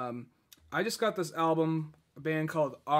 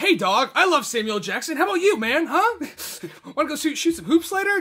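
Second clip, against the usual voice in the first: mock very high, very loud, overeager, try-hard voice; 12 semitones higher, 9 dB louder than usual. Acting out a guy trying too hard to relate: imitating someone trying too hard. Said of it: "this guy's trying way too hard".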